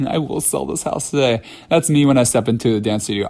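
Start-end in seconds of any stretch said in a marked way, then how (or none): 0.1-1.4 mock words blubbered through tearful sobs. Retelling a movie scene where a character repeats a line: imitating sobbing while speaking.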